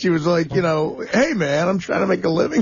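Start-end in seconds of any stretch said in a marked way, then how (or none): 1.1-2.6 put-on sassy tone with attitude. Retelling how she answered someone: imitating someone giving attitude. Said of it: "gave Gary, like, some attitude".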